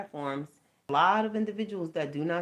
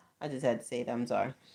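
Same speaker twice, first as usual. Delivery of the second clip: normal talking voice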